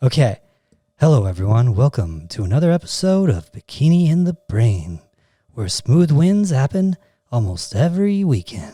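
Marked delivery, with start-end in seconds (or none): 1.0-8.8 silky, smooth late-night jazz radio DJ voice. Podcast intro by special request, in a jazz DJ radio voice. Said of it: "my jazz D J radio voice intro".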